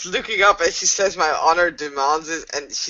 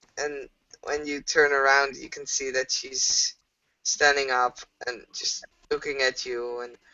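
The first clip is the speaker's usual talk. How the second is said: normal talking voice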